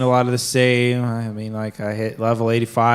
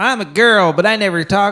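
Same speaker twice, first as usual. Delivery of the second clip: high-pitched, mocking put-on girl voice. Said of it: "Not one of those".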